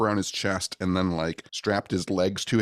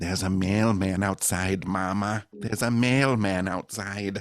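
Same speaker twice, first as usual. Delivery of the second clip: creepy put-on voice. Showing what Toad would sound like if he had a voice: creepy Toad voice. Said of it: "it sounds so creepy".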